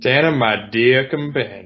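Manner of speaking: put-on Southern gentleman accent and voice. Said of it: "you're really doing an interesting combo of people".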